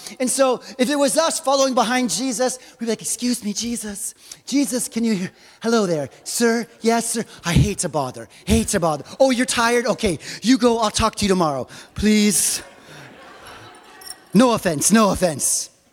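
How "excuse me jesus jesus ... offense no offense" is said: fawning, exaggerated, over-the-top, overly polite tone. Speaker acts out how we would address the one we follow: mock overly polite. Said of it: "We're so polite".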